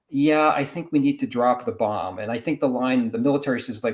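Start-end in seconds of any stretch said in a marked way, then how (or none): none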